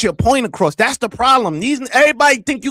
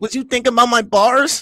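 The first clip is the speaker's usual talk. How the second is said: plain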